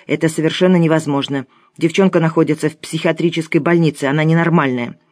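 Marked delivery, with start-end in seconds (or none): none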